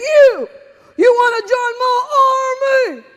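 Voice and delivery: shrill, booming, very loud, high, gung-ho enthused yell. Retelling a sergeant recruiting in a hallway: imitating an enthusiastic yell. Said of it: "yelling and screaming like he was super enthused".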